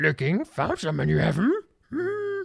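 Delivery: character voice with pitch wandering up and down. Thanking a new follower, the speaker quotes Yoda in a Yoda voice. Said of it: "That's my Yoda voice".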